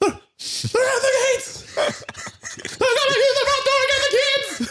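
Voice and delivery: goofy, very high-pitched alarmed call. Retelling a favorite comedy sound check outtake: Will Ferrell impression. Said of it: "he's like".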